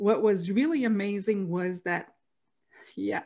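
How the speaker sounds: choked-up voice catching, overcome, struggling to get words out. Telling a family story, choking up. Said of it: "I'm choking up".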